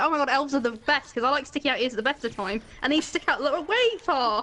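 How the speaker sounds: ordinary talk, nothing marked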